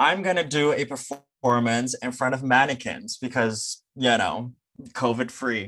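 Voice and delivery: ordinary talk, nothing marked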